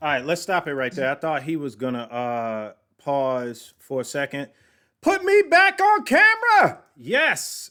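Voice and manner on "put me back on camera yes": very high, slow, drawn-out, stretched-out yell. Interrupting a played clip to get back on camera: yelling. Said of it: "sorry for yelling in your ear".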